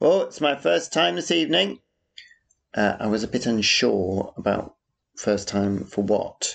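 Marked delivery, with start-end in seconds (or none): 0.0-1.8 put-on very loud, high, carrying voice. Retelling what a man at the next urinal said at a party, retelling a very loud voice. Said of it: "said in a very loud voice".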